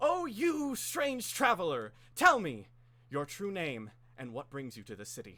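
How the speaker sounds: big, loud, high booming proclamation. Storyteller voicing the Guardian questioning a strange traveler, big Guardian voice. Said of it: "she puts on a big voice".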